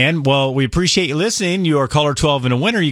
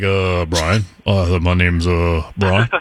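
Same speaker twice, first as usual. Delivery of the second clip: mock-hesitant, much lower pitch, much slower pace; 9 semitones lower than usual. A radio host teases a caller for hesitating, imitating Brian's hesitant name. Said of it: "why do you hesitate when you say your name".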